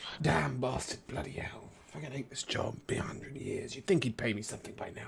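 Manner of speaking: near-whispered, hushed, running grumble with curses. A character sweeping the floor with a broom, grumbling. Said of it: "replaced his verbal components of his spell with just grumbling".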